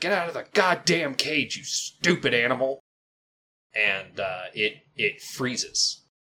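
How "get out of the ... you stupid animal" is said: angry yelling, much higher. Narrating a scene, voicing a carnival worker abusing a caged animal: yelling at an animal. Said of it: "Just yelling".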